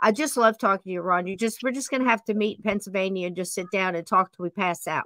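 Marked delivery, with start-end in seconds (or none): 0.0-1.3 rushed, fast, gushing speech. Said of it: "I'm talking real fast".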